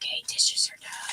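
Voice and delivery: acted-out whisper. Explaining a habit of whispering to yourself while doing dishes, retell your own whisper. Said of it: "I'll be in the kitchen doing dishes".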